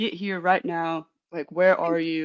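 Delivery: pretend urgent tone. Acting out a hypothetical call after finding a body: acting out urgent demand. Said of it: "it would be a lot of urgency".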